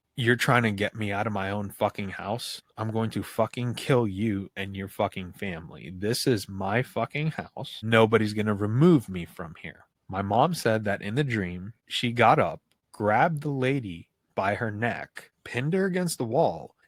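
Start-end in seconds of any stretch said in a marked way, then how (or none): none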